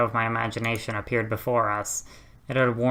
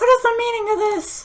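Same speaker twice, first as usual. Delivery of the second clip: forced, throat-straining put-on voice, much higher; 7 dB louder than usual. Voicing a character arriving at a commotion, throat-straining forced voice. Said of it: "That actually hurt my throat".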